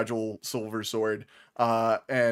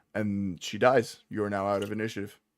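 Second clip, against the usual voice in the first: ordinary talk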